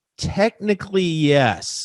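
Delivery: technically yes pitched high and loud. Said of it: "notice the inflection in my voice".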